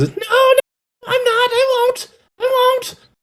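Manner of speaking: small creature whimpering, very high and slow. A storyteller voices the kobold answering the man's threat, whimpering kobold. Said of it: "as the kobold whimpers".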